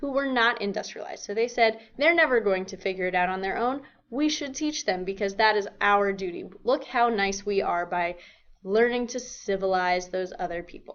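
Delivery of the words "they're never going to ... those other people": plain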